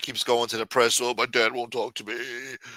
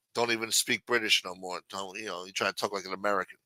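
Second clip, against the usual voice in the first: ordinary delivery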